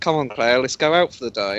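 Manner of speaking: ordinary talk, nothing marked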